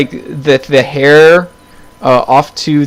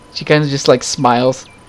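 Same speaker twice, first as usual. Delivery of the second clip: usual speaking voice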